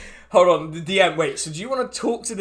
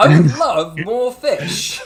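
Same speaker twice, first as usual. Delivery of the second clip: loud, drawn out, with dramatic flair; 8 dB louder than usual. Voicing a cat character answering an offer: Matt Berry voice. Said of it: "a Matt Berry flair".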